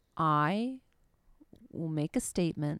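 imitated slow, restrained, held-back delivery. Retelling how she spoke with restraint: imitating slow restrained speech. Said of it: "she spoke so slowly".

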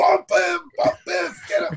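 very high-pitched, loud yelling. Retelling a theme park ride's story, imitating Christopher Lloyd yelling. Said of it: "Christopher Lloyd's voice saying".

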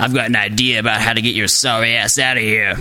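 low, whispery, bullfrog-like voice. A disembodied voice addresses the narrator in his cubbyhole; whispery chain-smoking bullfrog voice. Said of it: "The sound is a voice of indeterminate origin and gender".

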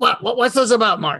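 put-on thick Brooklyn accent. Retelling waking Larry up; Larry answers Mark in a thick Brooklyn accent. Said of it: "he had this thick Brooklyn accent".

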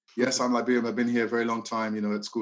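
plain

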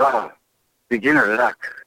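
very high, squeezed, creaky, dry delivery. Quoting a favorite movie line: Mister Miyagi voice. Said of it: "And he goes".

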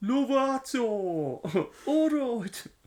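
imitated thick Birmingham accent shouting. Recalling someone shouting a name at a competition, retelling a thick Brummie shout. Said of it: "in a really thick Brummie accent".

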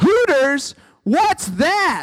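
very high, shrill, top-of-the-lungs shout. Retelling asking loudly in class as a child: imitating own past yell at full volume. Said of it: "yell at the top of my lungs".

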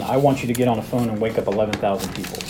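ordinary delivery

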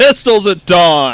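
mock dramatic, loud, high, slow bellowing cry.

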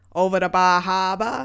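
exaggerated pop-style Maine accent. Comparing the real down east Maine accent with the pop-culture one, pop-culture Maine accent. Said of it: "the accent in popular culture".

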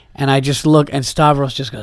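plain

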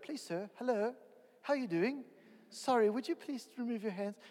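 put-on proper English accent. Contrasting how a man would rebuke a kid in church in England: mock proper English accent. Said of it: "in proper English".

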